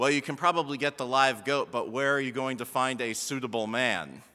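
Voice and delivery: bone-dry, flat, very low deadpan. Speaker retells what their wife said about the live goat, retelling her deadpan line. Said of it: "totally deadpanned to me".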